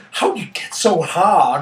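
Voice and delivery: put-on effeminate voice from a man. Recounting a man who came up and complimented him, imitating Latman's effeminate voice. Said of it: "he had this quite effeminate voice".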